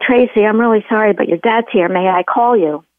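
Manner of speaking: usual speaking voice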